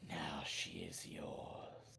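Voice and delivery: very soft, breathy, hushed whispered beast voice. Storyteller voices the beast speaking to the player's character, beast whispering. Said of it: "The beast whispers".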